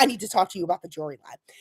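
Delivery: acted ominous, foreboding tone, low and hushed. Retelling what he told her before bringing up the line, mock-ominous tone. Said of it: "he tells her kind of like ominously".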